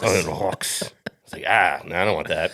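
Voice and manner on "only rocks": put-on French-Canadian accent, quieter. Chiming in on a story about a French-Canadian guy, imitating French-Canadian accent. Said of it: "the way he said rocks".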